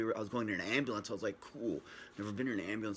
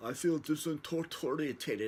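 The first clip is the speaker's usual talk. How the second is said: slightly high mumble, words slurring together; 5 semitones higher than usual. Retelling speaking to his wife during an intense headache, mimicking mumbled words. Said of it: "I was mumbling my words".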